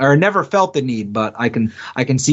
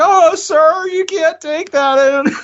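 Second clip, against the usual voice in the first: squeaked out high and slow. Imagining a Target worker objecting, the speaker does a Squeaky Voiced Teen voice. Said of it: "the squeaky voiced teen from Simpsons?".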